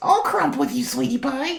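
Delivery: very high-pitched, raspy voice. A streamer answers a chat comment praising her voice: raspy Marge voice. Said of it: "It's raspy me".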